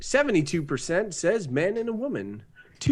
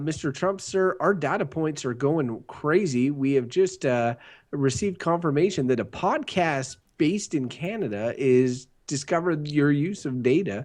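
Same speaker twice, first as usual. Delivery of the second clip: ordinary delivery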